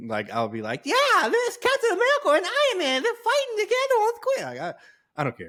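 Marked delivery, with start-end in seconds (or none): 0.9-4.5 put-on loud, very high, thrilled excited child voice. Imagining reacting to the game trailer as a ten-year-old: imitating own ten-year-old self. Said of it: "I guess if I was ten".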